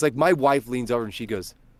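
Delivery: ordinary delivery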